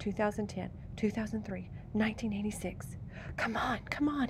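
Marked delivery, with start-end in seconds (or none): 3.4-4.3 muttered at a higher pitch. Searching through a coin jar for quarters, he mutters. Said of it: "he muttered".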